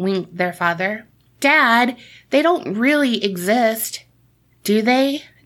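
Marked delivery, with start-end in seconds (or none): 1.4-5.2 slow, uncertain, sheepish voice. A boy asks his dad a question; sheepish question. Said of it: "Jeepy sheepishly asked".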